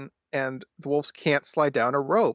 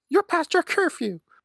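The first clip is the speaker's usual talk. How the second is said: mock screaming scold, higher pitch. Imagining a character scolding someone for missing curfew: imitating Mrs. Beaver screaming. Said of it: "she starts screaming at him".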